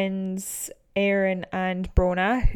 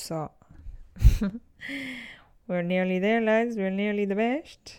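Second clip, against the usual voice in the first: accent from Kerry. Tell the lads how close you are to the record in a put-on Kerry accent. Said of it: "this Kerry accent that I put on".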